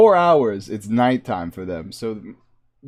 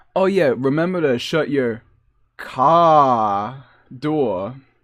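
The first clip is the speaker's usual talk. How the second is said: put-on slow Boston accent, "car" drawn out. Recalling a local guy whose remark sets off his own accent, in a Boston accent. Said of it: "proper Boston accent".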